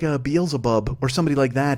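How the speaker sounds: usual speaking voice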